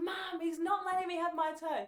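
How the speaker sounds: high-pitched, very loud scream. Retelling a childhood fight over a turn: imitating own past screaming. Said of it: "I just remember screaming".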